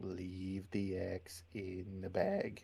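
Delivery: very slow half-whispering. As a character walking others up, speaking only to her: half-whispering. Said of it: "I kind of whisper to her".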